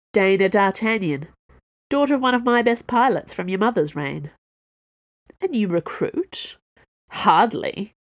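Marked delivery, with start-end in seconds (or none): 7.1-7.9 scoffing tone, with a scoff. Answering Her Royal Highness about a new recruit, scoffing. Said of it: "Treville scoffed".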